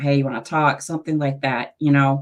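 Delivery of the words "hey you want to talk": ordinary talk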